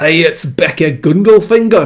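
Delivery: loud, put-on Scottish accent all the way through. Greeting someone by name at the start of the day: Scottish accent. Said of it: "in a Scottish accent".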